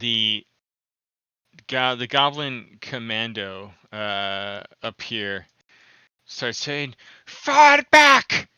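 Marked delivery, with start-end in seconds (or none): 7.3-8.4 very high, very loud, shrill screaming. Narrating a fight, the speaker voices a goblin commando, screaming commands. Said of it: "he just starts screaming like commands".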